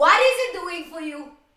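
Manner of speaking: very loud, deliberate, drawn-out yelling. Arguing about online commenters with another speaker: yelling. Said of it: "I'm yelling at this".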